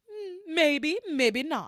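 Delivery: terrible high character voice, dragged out slowly. Recapping a scene, imitating how Tabitha dodges questions: terrible Tabitha impression. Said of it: "that's a terrible Tabitha".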